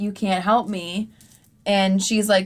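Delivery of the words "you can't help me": ordinary delivery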